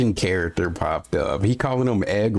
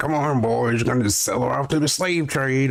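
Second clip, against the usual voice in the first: fairly Southern put-on accent; 5 semitones higher than usual. Speaker mimicking how someone else delivered a line, fairly southern accent. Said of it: "A fairly southern accent that".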